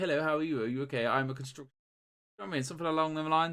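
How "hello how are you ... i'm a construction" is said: normal talking voice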